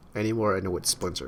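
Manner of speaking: ordinary talk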